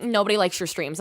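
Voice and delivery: normal talking voice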